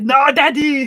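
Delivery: loud, high, hammy action-hero yell. Retelling a game played with a friend, yelling: Arnold Schwarzenegger voice. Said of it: "we just kept using the Arnold Schwarzenegger voice".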